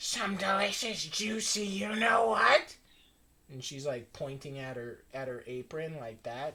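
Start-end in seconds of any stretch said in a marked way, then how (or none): 0.0-2.8 put-on hag voice, higher and louder. Voicing a hag in a bloody apron welcoming the players: hag voice. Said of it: "fucking hag in just a bloody apron".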